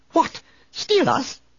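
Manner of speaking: very high, squeaky, alarmed outburst. A narrator reads the droid's reply to the Chadra fan, in a squeaky C-3PO voice. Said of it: "3PO squeaked".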